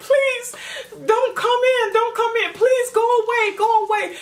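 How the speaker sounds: put-on, very high, shrill, tearful crying scream. Retelling a TV scene where she begs him to leave: imitating someone screaming and crying. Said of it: "She's screaming, crying, like".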